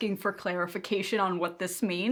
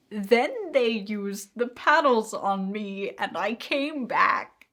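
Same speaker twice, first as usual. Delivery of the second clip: fighting back laughter while reading aloud; 2 semitones higher, 3 dB louder than usual. Reading a comment aloud, trying not to laugh: laughing while reading. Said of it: "I can't get through it without laughing".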